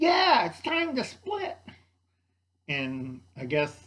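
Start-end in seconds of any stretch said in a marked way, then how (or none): 0.0-1.6 put-on New York accent, much higher pitch. Retelling a story, the speaker quotes the cockroach guy in a New York accent. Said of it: "the cockroach guy in a New York accent's like".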